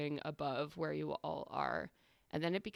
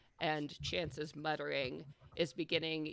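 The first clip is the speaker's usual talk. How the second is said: usual speaking voice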